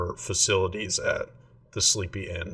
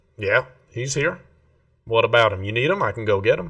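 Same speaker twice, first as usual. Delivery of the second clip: nasal voice, louder; 4 semitones higher, 7 dB louder than usual. A man leaning by a trap door answers visitors looking for someone, nasal voice. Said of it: "He's got a kind of nasally voice".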